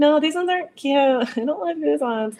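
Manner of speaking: put-on high voice, fighting tears, trying not to cry. Retelling answering from a dressing room, imitating holding back tears. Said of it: "crying, but, like, trying not to cry".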